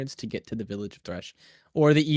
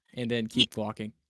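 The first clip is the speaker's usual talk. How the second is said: usual speaking voice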